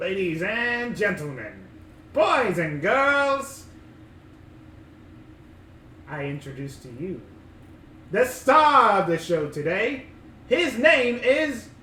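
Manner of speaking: loud, slow showman announcer voice.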